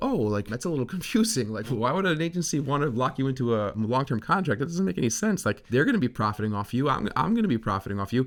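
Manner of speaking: confused, non-combative, lilting, wide-ranging puzzled tone.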